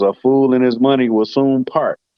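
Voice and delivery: plain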